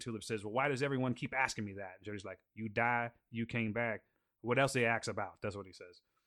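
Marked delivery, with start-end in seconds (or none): 2.5-5.3 put-on Cajun accent, laid out plainly. Quoting Jody's reply to Tulip in a scene: Jody's Cajun accent. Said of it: "he clearly has a Cajun accent".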